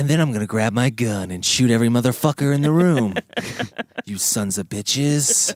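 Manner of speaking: hard, movie-style tough-guy delivery. Imitating Clint Eastwood turning violent mid-broadcast: Clint Eastwood tough-guy voice. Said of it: "I was waiting for him to be like".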